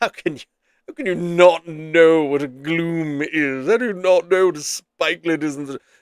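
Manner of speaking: put-on know-it-all British accent. Voicing an imagined listener questioning what he doesn't know: know-it-all british voice. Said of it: "I get my know-it-all British voice on".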